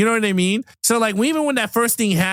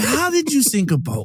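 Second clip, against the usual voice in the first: mock passionately pained, wounded, hurt, impassioned voice; 4 semitones higher than usual. Retelling how a man reacted to a sunk boat, mock-hurt tone. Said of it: "he said it with passion, like so hurt".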